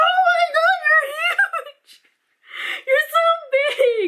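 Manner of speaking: acted, shrill, squealing, very high shrieking scream. Retelling seeing a huge spider at home: imitating her own screaming. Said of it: "I just kept screaming".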